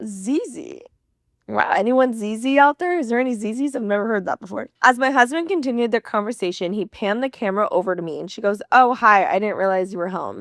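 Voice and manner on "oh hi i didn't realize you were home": awkward, guilty, sheepish, caught-out tone. Retelling her greeting when the camera panned over: imitating someone sheepish. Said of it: "in the most sheepish way possible".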